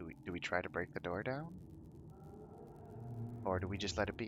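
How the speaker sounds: very soft, hushed, quiet whisper. Describing a companion who walks up and asks the group something: whispering. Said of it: "he whispers".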